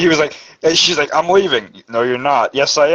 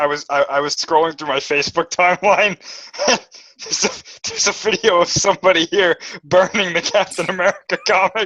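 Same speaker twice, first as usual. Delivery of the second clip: talking through bursts of laughter; 4 semitones higher than usual. Explaining why they are laughing at a video seen online, laughing while talking. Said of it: "I'm laughing because".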